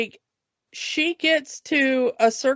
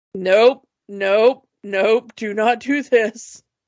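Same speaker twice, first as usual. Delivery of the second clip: slow, deliberate, drawn-out horse voice; 3 semitones lower than usual. Retelling a scene with a girl at the stones: voicing the horse. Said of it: "And the horse is like".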